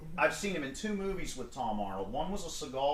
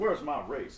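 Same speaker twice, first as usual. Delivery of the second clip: normal talking voice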